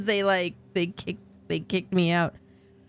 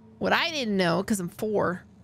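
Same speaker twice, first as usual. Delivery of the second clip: ordinary talk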